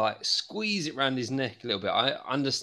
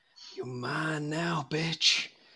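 hushed whisper, higher, slower; 4 semitones higher than usual. A player's character leans forward to his ear, whispering. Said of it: "lean forward and whisper in his ear".

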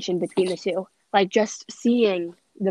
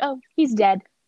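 put-on offhand, breezy delivery, slightly higher; 5 semitones higher, 4 dB louder than usual. Retelling a movie character's reply: imitating a nonchalant reply. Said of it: "he said it, like, so nonchalantly".

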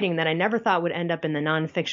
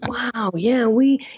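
nasal, raised, pitched-up voice; 6 semitones higher, 5 dB louder than usual. Showing an impression of an actor's typical manner: Owen Wilson impression. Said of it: "he's got that sort of nasally thing".

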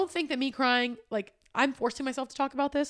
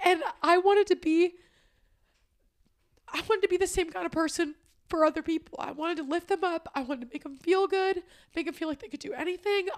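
crying, tearful, higher-pitched voice; 5 semitones higher than usual. Speaking on a podcast episode, crying. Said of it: "I'm so sorry I'm crying".

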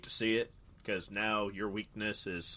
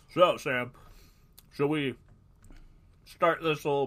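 mouth full, louder and higher pitched; 4 semitones higher, 6 dB louder than usual. Asking a co-speaker whether to start; talking with mouth full. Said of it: "I have a big old chunk of taco in my mouth".

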